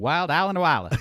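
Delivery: strong Alabama accent. Saying a place name three times fast, the speaker slips into a full alabama accent. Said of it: "go full Alabama for?".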